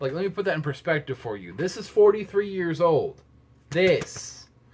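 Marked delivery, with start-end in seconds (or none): 1.5-4.4 very loud, very high, drawn-out, slow shout. Talking about a forty-three-year-old album, shouting. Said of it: "I'm sorry, I'm shouting".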